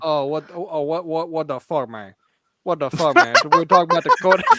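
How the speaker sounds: Louisiana accent, loud. Told by another speaker to read the next part, doing it in a louisiana accent. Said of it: "in a Louisiana accent".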